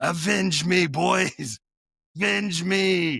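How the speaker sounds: loud, high, very slow drawn-out scream. Retelling a movie scene where a father walks away from a fence: imitating a scream. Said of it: "he screams to the fence".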